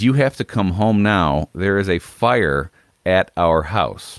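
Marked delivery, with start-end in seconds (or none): none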